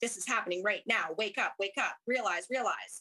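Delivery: put-on firm, assertive, loving voice. Retelling what the inner guide's voice said: imitating an assertive loving voice. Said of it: "very, very assertive voice".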